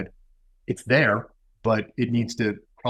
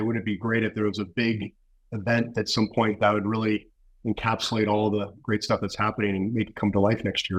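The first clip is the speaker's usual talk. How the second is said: usual speaking voice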